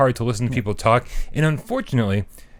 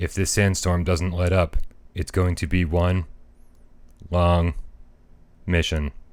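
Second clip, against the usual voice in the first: low, flat monotone, each word spaced out; 6 semitones lower than usual. Repeating a man's line exactly as he said it, flat, no inflection. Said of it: "I'm gonna say it just like he says it, no exaggeration".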